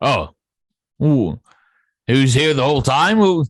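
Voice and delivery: startled, surprised oohing, pitched high. Voicing a tiefling who notices someone: tiefling voiced by the gm. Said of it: "a tiefling and goes".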